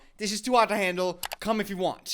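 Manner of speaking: ordinary talk, nothing marked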